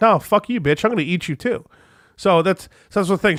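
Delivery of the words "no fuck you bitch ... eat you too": cranky, pissy, annoyed dog voice. Retelling a movie scene, voicing the dog: imitating a pissy dog. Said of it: "The dog was getting pissy with her".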